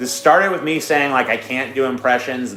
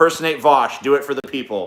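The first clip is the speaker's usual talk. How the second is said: ordinary delivery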